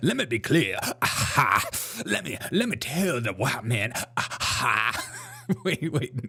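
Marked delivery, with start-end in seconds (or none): 0.0-5.1 put-on female preaching voice, preacher's cadence, slower. Excited by a woman's cadences, show how she talks, imitating a woman's preaching voice. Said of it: "she's doing that preaching voice".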